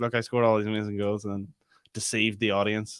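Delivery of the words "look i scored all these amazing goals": plain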